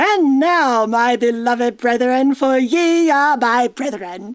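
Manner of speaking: put-on mid-Atlantic accent from no country. Speaker performs an angel addressing the brethren, in a mid-Atlantic accent. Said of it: "It's that mid-Atlantic accent".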